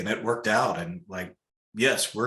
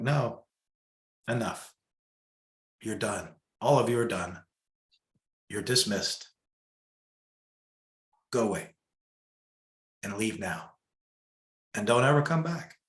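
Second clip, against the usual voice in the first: steady, resolute, calm and strong, acted out. Recalling a meditation and dismissing them all, retelling a calm, strong command. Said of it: "I just find this peace and this strength".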